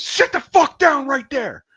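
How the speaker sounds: drill-sergeant scream, very loud, shrill and high. Retelling how a man threw him out the door, acting out his screaming. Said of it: "I hear him screaming at me".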